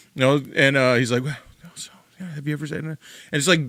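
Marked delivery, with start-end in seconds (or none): 1.2-2.9 gentle, soft, quick, doctor-like bedside manner. Retelling what a man with a camera asked him, imitating soft bedside-manner voice. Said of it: "in this really like soft, like bedside manner voice".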